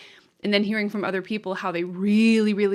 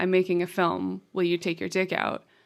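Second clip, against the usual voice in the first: usual speaking voice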